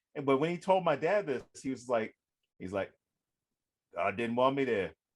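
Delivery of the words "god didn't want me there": thick put-on Creole Cajun accent. Retelling a man's story told to the speaker's dad, in a thick Creole Cajun accent. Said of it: "he had a very thick Creole Cajun accent".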